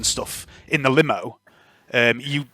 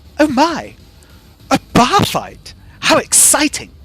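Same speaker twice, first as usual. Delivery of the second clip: very high, prim, mechanical, fussy robot voice; 12 semitones higher than usual. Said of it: "Is it C three P O?".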